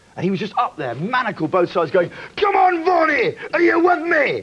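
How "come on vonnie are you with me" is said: very high, slow, put-on Scottish accent. Retelling what a fellow prisoner on the bus said: imitating a mad Scotsman. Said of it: "he was a mad Scotsman".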